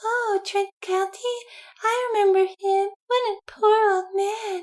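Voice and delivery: very high, lifted-up saleswoman voice. Retelling a scene with the perfume store woman: imitating the perfume store woman. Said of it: "She really has a voice like that".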